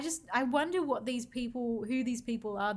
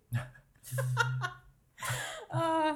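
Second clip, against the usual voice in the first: high, helpless laughing fit. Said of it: "I can't stop laughing".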